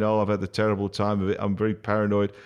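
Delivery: normal talking voice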